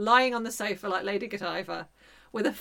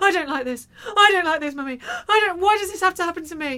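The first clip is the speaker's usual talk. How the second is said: put-on howling, wailing child voice, much higher; 9 semitones higher, 7 dB louder than usual. Retelling what the injured child cried while her foot was held, imitating a howling child. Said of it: "she's howling at the top of her voice".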